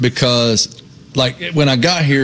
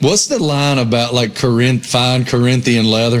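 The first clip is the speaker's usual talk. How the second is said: ordinary talk, nothing marked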